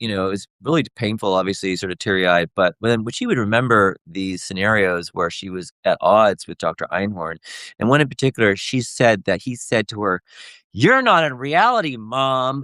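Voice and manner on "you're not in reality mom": scolding near-yell, pitched up and slow. Recounting how a doctor spoke to a mother, imitating Doctor Einhorn almost yelling. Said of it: "in that tone of voice".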